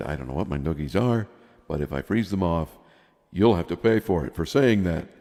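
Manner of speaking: plain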